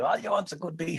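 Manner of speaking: put-on Longford accent. Retelling what a mother said about music: imitating mother's Longford accent. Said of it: "in her very Longford accent".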